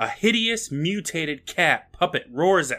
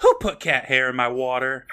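normal talking voice

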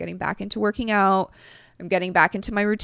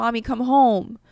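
put-on crying child voice, pitched higher; 3 semitones higher, 3 dB louder than usual. Retelling a son's plea on FaceTime before bed: imitating Arkham crying. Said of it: "Arkham would be crying".

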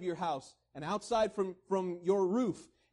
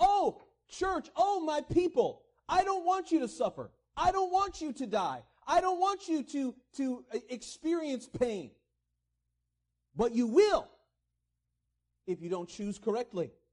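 earnest, high, pleading, begging cry; 5 semitones higher than usual. Acting out God speaking to his people: acting out God pleading. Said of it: "He's pleading with them".

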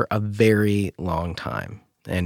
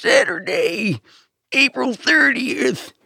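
put-on very high, very old man's monster truck promo voice. Showing a co-host how a very old man would do monster truck voice. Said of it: "a very old man doing Monster Truck voice would be like".

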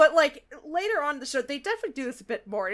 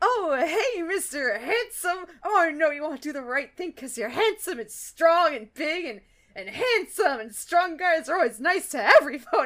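clumsy, fake-flirty voice, trying too hard. Retelling a cartoon haggling scene: imitating Fluttershy's clumsy flirting. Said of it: "doing the worst bit, trying to do the flirting".

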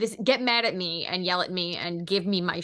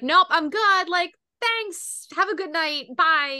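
put-on very high, breezy, friendly, cheery tone; 10 semitones higher, 6 dB louder than usual. Retelling how a character turned down help: imitating a cheery brush-off.

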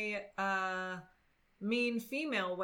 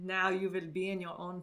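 Russian accent, lower pitch; 2 semitones lower than usual. Asked to let others hear it, speaker attempts a russian accent. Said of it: "let me see if I can get my Russian".

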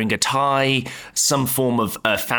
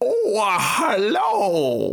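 put-on high, swooping scarecrow bumpkin yokel voice; 8 semitones higher than usual. Describing how a figure dressed like a scarecrow would speak: scarecrow-like character voice. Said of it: "their voice would be more like".

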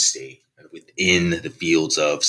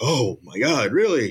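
high, feigned shock. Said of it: "Dave Chappelle kind of feigns shock".

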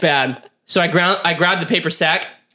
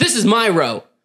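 imitated irate man's barked yelling; 3 semitones higher than usual. Retelling a plane passenger yelling at a flight attendant: imitating a man yelling. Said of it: "yelling at her".

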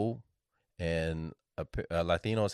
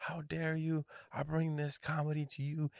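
mock yelling, pitched up; 9 semitones higher, 6 dB quieter than usual. Retelling how a comedian yelled at a noisy bar crowd: imitating Raymond yelling. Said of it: "was yelling at the, like".

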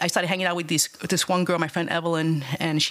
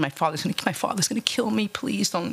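mock-tearful pleading, imitated crying; 3 semitones higher than usual. Recounting begging a man not to kiss them, retelling a crying plea. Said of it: "I started crying".

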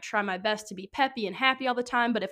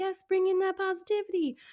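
very high, tiny talking plant voice; 10 semitones higher than usual. Joking about how plants talk, voicing the sweet grass. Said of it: "That's how grass sounds".

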